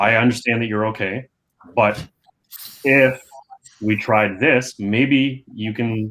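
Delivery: slow, halting, hesitant pitch. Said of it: "can you hear the, the, like, hesitation in my voice".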